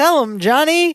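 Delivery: high-pitched game-show TV announcer delivery. Retelling how he held up a vase, the speaker yells in announcer voice. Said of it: "yells into it in announcer voice again".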